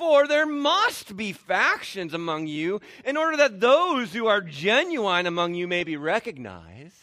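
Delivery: loud, slow, drawn-out, sarcastic tone. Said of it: "is being very sarcastic here".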